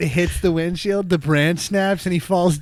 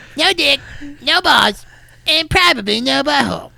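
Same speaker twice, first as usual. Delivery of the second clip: high-pitched cartoon kid voice; 8 semitones higher than usual. Repeating a line just said, in a Cartman voice. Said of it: "I just heard that in like a Cartman voice".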